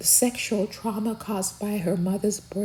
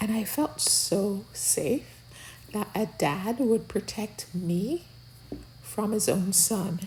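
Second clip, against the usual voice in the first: normal talking voice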